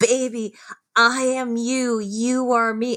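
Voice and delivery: put-on acted drunk slurring. Describing an uncomfortable moment, imitating a woman slurring her words. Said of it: "slurring her words and going like".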